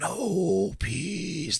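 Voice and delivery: eerie, crazy, creepy put-on alien voice. Quoting a movie alien's threat: imitating a crazy alien voice. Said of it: "That voice is fucking crazy".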